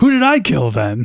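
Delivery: put-on nonchalant voice. Retelling a movie scene where a character is unveiled: nonchalant Mister Plum voice. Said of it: "so nonchalantly".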